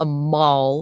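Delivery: exaggerated bad American accent, "mall" drawn out. Saying mall the way americans do, in a bad american accent. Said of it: "as some of the Americans will say ... I just like saying things with like a bad American accent".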